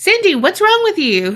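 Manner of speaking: very high-pitched male voice. Retelling what a guy asked a girl, imitating a high-pitched guy. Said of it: "He's very high pitched".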